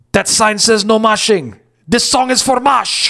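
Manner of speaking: put-on Swedish-accented voice. Quoting a performer who points at the no-moshing sign at a show, in a Swedish accent. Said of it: "in his Swedish accent and said".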